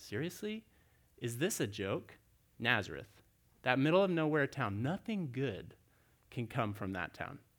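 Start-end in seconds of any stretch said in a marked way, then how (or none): 0.0-2.1 skeptical, disbelieving, are-you-kidding tone. Retelling Nathanael's first reaction to hearing about Nazareth: imitating skeptical disbelief. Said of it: "his skeptical hesitation".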